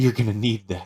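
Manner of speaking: muttered under the breath. Voicing a character in a tabletop game, speaking to the player, muttered under her breath. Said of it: "you hear her say under her breath".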